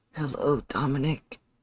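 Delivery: speaking with strain. Voicing a floating girl greeting a player: strained voice. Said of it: "as she speaks with a strained voice".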